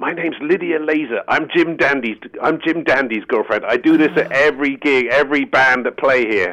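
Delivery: clumsy put-on American accent. Retelling what a woman said to her at a gig, in a bad american accent. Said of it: "I can't do an American".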